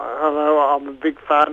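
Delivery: ordinary talk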